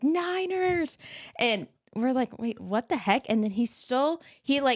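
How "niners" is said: acted, shrill, piercing, very high, in-your-face yell. Retelling a man who screamed in her and her friends' faces: retelling a scream. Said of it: "in our face just starts screaming".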